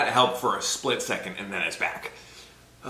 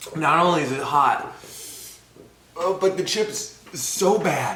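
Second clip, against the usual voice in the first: high, teary, crying through the words; 5 semitones higher than usual. Eating a very spicy chip on camera, crying from spice. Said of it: "I'm crying".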